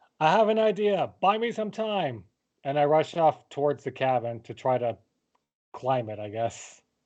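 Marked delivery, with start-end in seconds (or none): 0.2-2.2 high-pitched, in-character shout. Playing a character who runs off toward a cabin: shouting in character. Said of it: "I just shout".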